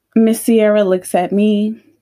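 ordinary delivery

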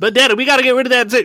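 very high, plugged voice pushed through the nose. Show how she sounds when her accent comes out speaking to daddy, imitating her plugged, through-the-nose voice. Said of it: "It's a little bit of that".

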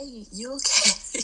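high, slow, concerned tone. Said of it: "my friends are even like".

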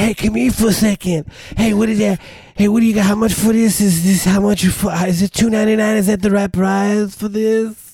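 put-on laid-back burnout guy Cleveland accent. The speaker shows how everyone around there talks, in a burnout guy accent. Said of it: "everyone talks like that".

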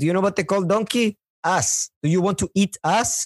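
high-pitched put-on Chinese accent.

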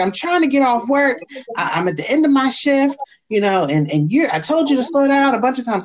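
loud, high-pitched yelling. Retelling a traffic stop, quoting the cop: imitating a cop yelling. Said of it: "He's yelling at me".

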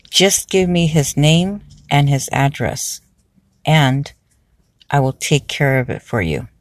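ordinary talk

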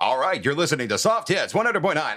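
cheesy, exaggerated radio DJ voice, loud and fast. Recalling their first time on radio, redoing the intro in an over-the-top radio voice. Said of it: "I went over the top radio voice".

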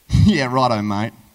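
loud, slow, derogatory and dismissive. Showing how you might answer someone in a discussion: derogatory. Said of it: "Use that mate in that derogatory".

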